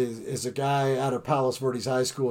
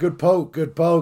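mock shouting, loud and hearty; 4 semitones higher, 5 dB louder than usual. Retelling cheering a hitter rounding second: retelling own yell. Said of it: "I'm yelling".

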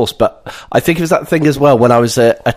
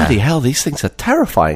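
ordinary delivery

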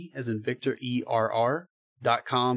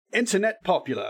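put-on English accent with raised pitch; 7 semitones higher than usual. Asked to say a phrase in a UK voice: UK accent like Matt Berry. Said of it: "Say internet popular in your UK voice".

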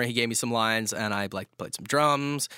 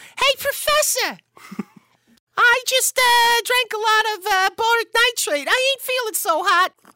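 squeaky, very high, loud comic character voice; 8 dB louder than usual. Asked to perform a comedy character's voice: Little Timmy character voice. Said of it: "Can you give me a little piece of that voice?".

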